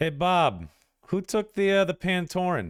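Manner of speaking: very loud, very high, shrill hollering. Voicing a desk clerk who calls back to a coworker: shouting over her shoulder. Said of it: "shouts over her shoulder".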